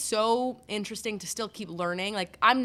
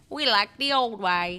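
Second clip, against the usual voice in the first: put-on old-timey Victorian-style British accent; 3 dB louder than usual. Explaining Canadian football, the speaker voices Canada: old British accent. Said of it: "That was my like old British".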